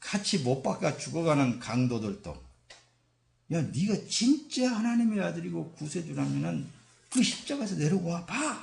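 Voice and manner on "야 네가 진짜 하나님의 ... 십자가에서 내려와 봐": high-pitched mocking jeer. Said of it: "이렇게 조롱했죠".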